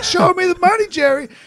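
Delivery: screaming very loudly at a very high pitch. Retelling a movie scene of a sports guy on the phone, retelling a scream over the phone. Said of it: "he's like screaming over the phone".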